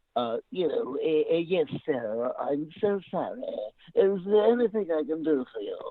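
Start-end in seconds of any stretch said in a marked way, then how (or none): 1.3-5.7 put-on stuffy, prim, high-pitched butler voice. Showing how he should have voiced the character instead: real stuffy higher-pitched voice. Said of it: "to make him real stuffy".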